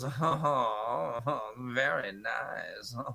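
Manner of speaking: soft, slow moan. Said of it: "does all these weird, like, Eurotrash moans".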